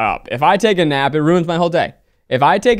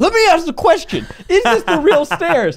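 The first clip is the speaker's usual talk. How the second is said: very high, irate, angry, insistent voice; 13 semitones higher than usual. Retelling a mom insisting on asking the tour guide: imitating an angry mom. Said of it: "And she got mad".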